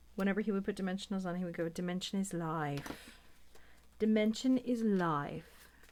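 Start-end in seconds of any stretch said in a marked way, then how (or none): 1.7-5.7 slow, put-on UK accent. Retelling how a YouTuber said a catchphrase: imitating Martin's UK accent. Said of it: "with his U K accent".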